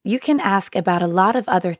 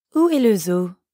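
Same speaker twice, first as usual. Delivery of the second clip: plain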